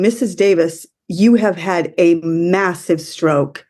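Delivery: ordinary talk, nothing marked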